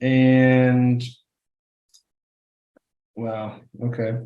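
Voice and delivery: very quiet, hushed, sad, disappointed murmur. Reacting to a roll of nineteen, sounding sad. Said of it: "You sound so sad".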